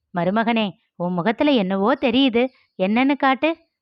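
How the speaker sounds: plain reading voice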